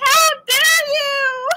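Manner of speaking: very high, shrill, enraged, furious shriek. Author recounts a reader screaming at them for killing Kate, imitating someone screaming angrily. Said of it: "she is screaming at me for killing Kate".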